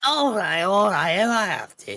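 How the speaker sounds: put-on girl character voice. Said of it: "that's the perfect voice for her".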